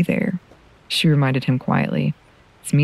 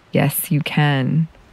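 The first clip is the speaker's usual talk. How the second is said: firm, much slower. Tilda answers him when he insists he can't go with them; firmly. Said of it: "Tilda told him firmly".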